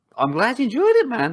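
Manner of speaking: very high, enthusiastic voice breaking and cracking. Telling another speaker you're glad they enjoyed the beer, voice cracking.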